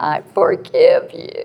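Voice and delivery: put-on tearful, crying voice, weeping while speaking. Retelling what a crying mother said back: imitating someone crying. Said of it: "She was just crying".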